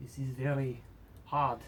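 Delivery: uncertain, tentative attempt at a French accent. Acting out a short scene, in an attempted French accent. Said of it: "I don't know if this is French accent".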